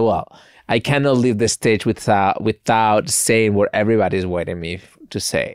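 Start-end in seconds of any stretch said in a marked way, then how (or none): none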